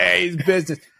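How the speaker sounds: put-on super thick, heavy, laid-on New York accent. Quoting a business guru he follows online; super New York accent. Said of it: "I'm talking with like a super New York accent".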